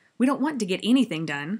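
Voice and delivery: loud, angry, snapped. Reading a story aloud, the narrator voices a speaker answering Milo, snapping angrily. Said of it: "snapped another angrily".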